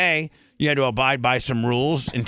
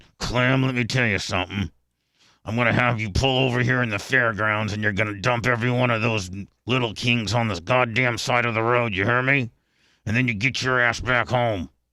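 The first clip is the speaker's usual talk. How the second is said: mock speech through gritted, clenched teeth. Retelling what a mean man told clem, retelling through gritted teeth. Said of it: "he talked with gritted teeth".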